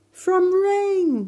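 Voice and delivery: shrill, very loud, very high shouting yell. Emir, having just stopped crying, calls out what he realized, shouting. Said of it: "he shouted".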